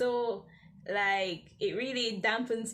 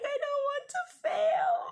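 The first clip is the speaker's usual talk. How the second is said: mock, very high, loud tearful crying wail; 5 dB louder than usual. Retelling a night walk back from the library with a classmate: retelling own past crying. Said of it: "and I was crying".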